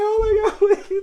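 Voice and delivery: put-on tearful pleading. Recalling watching a movie, retelling bawling, pleading. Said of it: "I was like".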